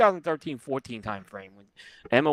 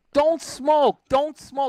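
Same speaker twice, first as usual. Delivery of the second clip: mock upset, very high-pitched and drawn-out; 13 semitones higher, 6 dB louder than usual. Retelling how someone got upset at people lighting cigars: imitating someone getting upset. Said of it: "getting all upset".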